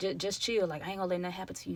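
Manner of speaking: whispering softly. Retelling what a guy whispered to the speaker: imitating a quiet whisper. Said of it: "low-key whispering to me".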